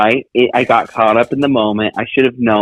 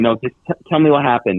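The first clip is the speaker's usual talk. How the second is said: disappointed, let-down tone. Retelling what the other speaker said on the phone: imitating someone sounding disappointed. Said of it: "I heard the disappointment in your voice".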